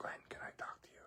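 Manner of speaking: whispered, barely voiced. Retelling how a man standing beside him asked to talk, whispering. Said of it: "and he's whispering".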